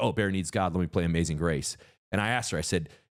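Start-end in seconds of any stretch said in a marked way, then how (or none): none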